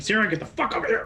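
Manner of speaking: high, fast shouting. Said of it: "he's just shouting".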